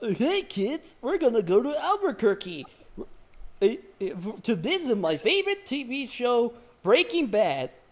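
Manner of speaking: high-pitched, swooping, slow delivery. Imagining a children's dinosaur taking kids to Albuquerque: Barney the Dinosaur voice. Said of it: "Imagine this, Barney the di-, the dinosaur".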